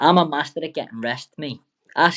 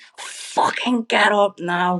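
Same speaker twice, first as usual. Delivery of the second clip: mock scream, higher, slower; 6 semitones higher than usual. Recalling lying on the floor, the speaker retells a man screaming at them: retelling a scream. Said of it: "Screaming at me to get up".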